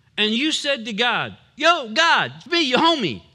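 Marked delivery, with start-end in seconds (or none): 1.6-3.2 New York Bronx accent, louder. Speaker imagines someone from the Bronx addressing God, Bronx accent. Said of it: "If you were from the Bronx".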